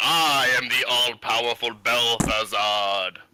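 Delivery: booming, amplified, drawn-out, grand announcer-like voice. A player casting a spell in a tabletop game, Belthazard's booming voice. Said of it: "it makes my voice boom up to three times as loud".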